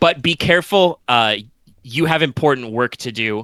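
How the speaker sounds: ordinary delivery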